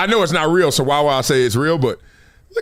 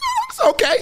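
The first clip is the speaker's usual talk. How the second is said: very high, insincere, fake-polite voice. Showing how the voice changes when lying to spare feelings: telling a polite lie. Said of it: "See how my voice changed already?".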